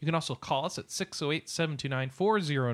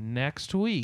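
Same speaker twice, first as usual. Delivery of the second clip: drawn-out, very slow words. Show host reminding listeners about next week's schedule, speaking very slowly. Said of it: "I'm going to say this real slow".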